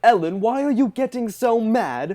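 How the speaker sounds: very high, loud, angry, exasperated outburst. Retelling a YouTuber getting mad at Ellen: imitating Kavos getting mad. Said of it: "he just gets mad at Ellen".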